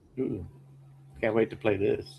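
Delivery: openly sarcastic delivery. Reacting to a game being shown to the others: sarcastic. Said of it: "I'm being sarcastic".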